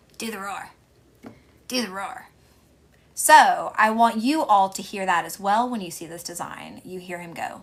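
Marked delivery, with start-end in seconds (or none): 0.2-2.3 hushed, whispered little-kid voice like a cartoon. Retelling a film scene where a kid says a line: Bobby Hill voice. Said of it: "Bobby Hill kid, going".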